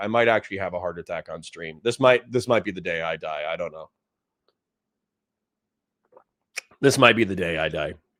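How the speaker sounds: grumpy mood. Streamer greeting chat at the start of a morning stream, grumpy. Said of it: "I'm sorry for being grumpy".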